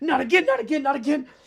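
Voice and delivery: very high, loud, shrieking panicked creature scream. Voicing a fleeing creature as it jumps aside: screaming creature. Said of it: "jumps to the side and screams".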